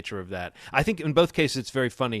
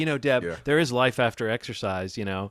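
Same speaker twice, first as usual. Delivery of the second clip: usual speaking voice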